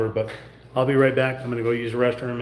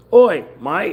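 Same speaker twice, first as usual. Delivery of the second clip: very loud, high-pitched Australian accent; 7 semitones higher, 10 dB louder than usual. Showing that two words can't be said without sounding australian: australian accent. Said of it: "without sounding Australian".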